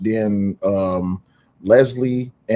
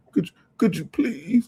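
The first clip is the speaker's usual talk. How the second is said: mock pleading, higher; 8 semitones higher, 3 dB quieter than usual. Mocking how another person asked for an apology: imitating someone begging.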